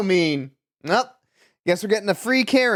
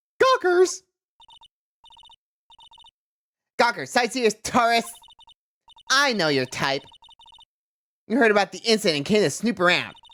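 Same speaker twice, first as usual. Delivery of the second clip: high, swooping nerdy character voice; 5 semitones higher than usual. Voicing a security guard character keeping gawkers out, nerd voice. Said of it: "I'm going into the nerd voice".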